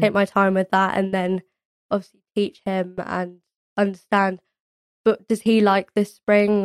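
ordinary talk

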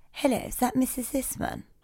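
hushed, quiet, whispered posh voice. Choosing a voice to use, one speaker tries out a really quiet, posh voice. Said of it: "really quiet, posh".

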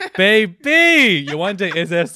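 delighted, happy. Welcoming Yawande, who has just arrived, so happy and delighted. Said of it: "I'm just so happy".

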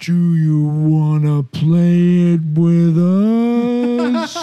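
loud slow-motion speech, "us" stretched. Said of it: "he said the words in slow motion".

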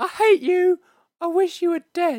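put-on very high, loud, hateful shrieking girl voice. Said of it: "Tina and her dad sound exactly the same".

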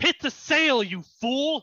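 shrill, very high, loud barked commanding yell. Voicing a character who orders another to hit the sail, shouting. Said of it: "she looks at you and goes".

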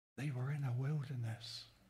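very quiet, low, hushed secretive undertone. Speaker lowers voice so others won't know, quiet, dropped-down voice. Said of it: "I'll drop my voice down because I don't want them to know it".

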